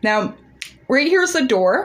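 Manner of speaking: talking with mouth full. Thanking a new follower and showing them the door: talking while swallowing. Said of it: "Sorry, I'm swallowing a Mentos".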